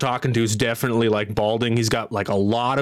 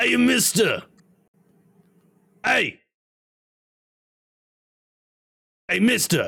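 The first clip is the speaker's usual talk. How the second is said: ruffian-style calling out, hollering, much higher; 10 semitones higher than usual. Narrating a scene, one ruffian above hails a player's character, ruffian calling out. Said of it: "one of them's like".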